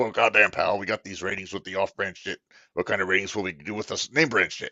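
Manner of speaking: gruff, wrestling-promoter-style voice. Reacting to what AJ said, perform it for the others in Vince's voice. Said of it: "I'm going to imagine I'm reading this in Vince's voice".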